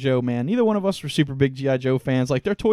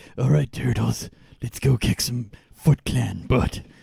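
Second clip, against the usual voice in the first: low, rough, creaky voice; 4 semitones lower than usual. Quoting the cartoon character's rallying line: Dirty Harry voice. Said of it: "sounded like Dirty Harry the whole time".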